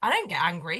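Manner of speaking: dead serious delivery. Retelling what the youngest child said when asked about getting cross: imitating a deadpan delivery. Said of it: "he said it so deadpan".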